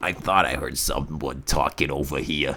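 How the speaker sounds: low, soft, raspy chain-smoker voice. Retelling what a drunk man said when he came over, in a chain smoker voice. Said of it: "he's got like a like a chain smoker voice".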